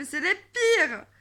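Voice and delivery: very loud, high, furious yelling at full blast. Ranting to the camera about men, angry yelling. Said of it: "je gueule, là, parce que je suis énervée".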